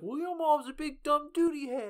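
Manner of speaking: shrill, high, very loud squabbling yell. Recounting a confrontation in front of the kids, imitating someone yelling. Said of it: "like both yelling at each other".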